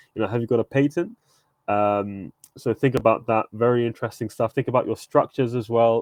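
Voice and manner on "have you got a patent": put-on American accent, played cool. Quoting the sharks' patent question, done in a cool American accent. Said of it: "in a cool American accent".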